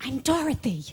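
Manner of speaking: soft, hushed, half-whispered stage whisper. Retelling half-whispering back to a music director backstage: imitating own half-whisper. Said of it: "And I whisper back".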